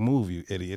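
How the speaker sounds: mock whispering. Retelling what they say by the slide: retelling a whisper.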